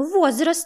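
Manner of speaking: brusque, curt, tossed-off, high-pitched single word. Ignoring her companion's last words, a woman cuts in curtly. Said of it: "коротко бросила Виктория".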